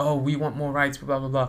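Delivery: ordinary delivery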